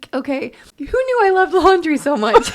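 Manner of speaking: loud, high-pitched bawling while talking. Laughing at herself over missing laundry, crying while talking. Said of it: "bawling over here".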